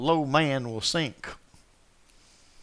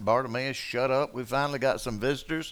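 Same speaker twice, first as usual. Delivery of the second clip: plain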